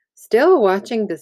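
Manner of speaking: ordinary delivery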